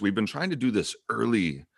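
ordinary talk

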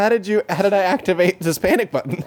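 talking through heavy laughter. With the giggles taking over, the speaker keeps talking: laughing hard while talking. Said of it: "I'm laughing so hard".

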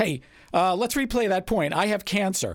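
very high, loud shout. Retelling a tennis match after a double fault: imitating a scream. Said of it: "then you'd scream across the net".

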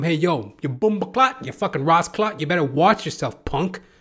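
mock hollering, angry and hot-tempered. Retelling yelling at a pizza delivery man who almost hit him: retelling yelling. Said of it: "So I start yelling at him".

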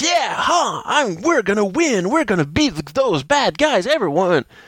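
high, excited anime-hero voice. Describing a Samurai ranger to listeners, doing his lines in Antonio's shonen hero voice. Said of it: "He talks in a really shonen kind of voice".

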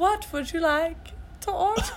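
clumsy fake French accent. Asked how they'd do her accent, attempting a bad French accent. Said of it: "this is a really bad accent. ... I can't do a French accent".

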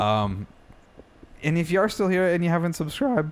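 cracking, breaking voice, cracking up high. Asking audio listeners who are still there to subscribe, voice cracking. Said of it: "my voice just cracked".

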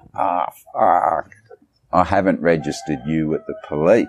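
put-on Aussie-accented exclamation. Retelling what a Vietnamese friend said one night: imitating an Australian accent. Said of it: "she's got an Aussie accent".

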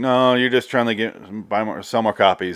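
ordinary talk, nothing marked

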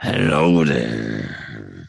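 very low, creaky, rough dragon rumble. Voicing a blue dragon that looks back at its rider: blue dragon speaking. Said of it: "as it looks over and goes".

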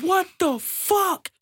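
mock shrill, very high, hyped shriek. Recounting reacting at work to an anime scene, retelling a scream. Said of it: "I screamed".

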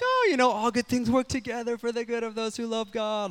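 high, put-on stoked voice with relief.

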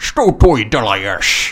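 put-on Scottish accent while speaking Russian. Quoting a Russian line from a movie: Sean Connery impression. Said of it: "when Sean Connery says in a Scottish accent".

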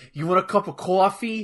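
put-on Boston accent. Showing how she talks: boston accent. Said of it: "she talks like she's from like Hod boston".

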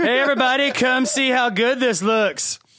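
put-on loud country voice. Telling a story with friends, the speaker imitates a loud country guy. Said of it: "He was too country and loud".

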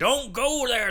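put-on drunk vagabond voice. Imitating a crazy drunk vagabond from horror movies warning people off. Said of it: "crazy drunk, like, uh, vagabond who's in horror movies is like".

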